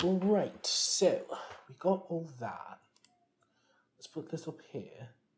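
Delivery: put-on British accent. Talking while playing a game, jokingly in a put-on british accent. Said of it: "Why am I talking in a British accent?".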